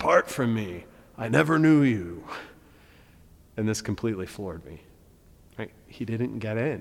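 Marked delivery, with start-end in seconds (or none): 0.0-2.2 possessed, demonic-sounding yelled voice. Retelling Jesus's answer to the man; yelled exorcist voice. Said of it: "yelled with a sort of exorcist voice".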